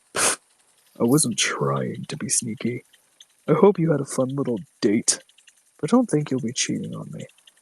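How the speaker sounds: deep, swooping demonic voice. Reading a story, the demon suddenly speaks up to Tom: deep demon voice. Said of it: "His deep voice".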